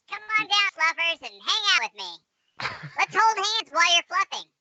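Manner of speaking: high-pitched chipmunk voice.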